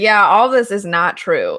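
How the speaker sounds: mock cheeky, sassy retort tone. Retelling what a foreign student in the book says: imitating a sassy student. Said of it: "real sassy about it".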